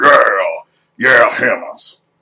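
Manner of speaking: put-on monster-style orc voice. Speaker describing two characters with hammers, in an orc voice. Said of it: "got that orc voice going".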